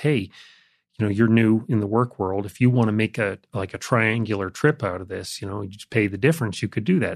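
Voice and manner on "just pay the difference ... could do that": normal talking voice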